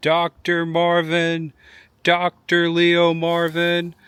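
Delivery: high, very slow, drawn-out scream. Narrating a man getting off a bus and screaming for a doctor: retelling someone screaming. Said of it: "he starts screaming".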